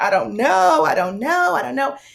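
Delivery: mock weeping, high, sobbing repeated words. Retelling what was said to the preacher in her suite: retelling own sobbing. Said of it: "I'm sobbing and I'm going".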